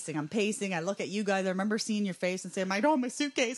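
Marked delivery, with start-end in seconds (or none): 2.7-3.6 mock, near-tearful, pleading tone. Speaker retells what she said to friends at the airport: retelling a near-tearful plea. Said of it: "Like I wanted to just cry to you".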